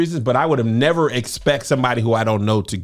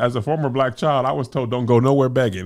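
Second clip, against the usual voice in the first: plain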